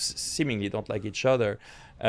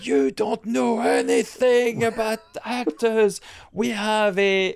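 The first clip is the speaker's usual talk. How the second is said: very high, loud, drawn-out screaming; 12 semitones higher, 6 dB louder than usual. Retelling the day he was screamed at, imitating someone screaming. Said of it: "he just was screaming at me".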